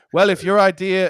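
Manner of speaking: bad put-on South African accent. Retelling Trevor Noah's comeback in an argument: shitty Trevor Noah South African accent. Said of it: "whatever his fucking shitty South African accent".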